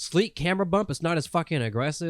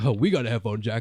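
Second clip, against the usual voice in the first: mocking, taunting put-on advert voice; 4 semitones lower than usual. Retelling how rival commercials mocked the phone: mocking Samsung ad voice. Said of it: "mocking the app, the, the iPhone seven".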